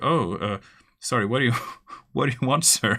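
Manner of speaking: caught off guard, startled, fumbling the words. Describing an example game scene, voicing a man who is acting startled. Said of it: "he looks a bit startled".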